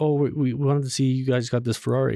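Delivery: normal talking voice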